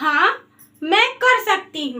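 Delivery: brief break after हाँ, then continuing. Lesson on pausing after saying yes in a sentence: short pause after हाँ. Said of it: "जब हम हाँ बोलेंगे उसके बाद हमें थोड़ा सा रुकना होगा। कैसे?".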